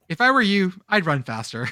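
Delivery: dead calm, very calm delivery. Retelling what a driver said while they were running: retelling a very calm line. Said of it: "just says very calmly".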